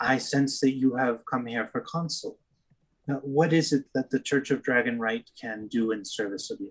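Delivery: serene, composed, very calm and even voice. A woman at a church greets outsiders who are not of the congregation: very calm. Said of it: "very calmly says".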